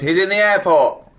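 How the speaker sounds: high, drawn-out, fuming angry shout. Retelling a quarrel with a loud phone caller: retelling a shout. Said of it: "I shouted".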